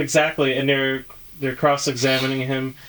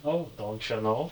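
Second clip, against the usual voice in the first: put-on Midwestern Minnesota accent; 3 semitones lower, 10 dB quieter than usual. Speakers trade Minnesota catchphrases, one saying this in a Minnesota accent. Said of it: "The Minnesota accent".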